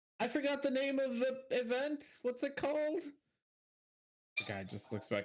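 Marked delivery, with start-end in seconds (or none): 0.2-3.0 loud shouting, pitched higher. Voicing a character who calls out a question about the event: yelling out. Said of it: "he yells out".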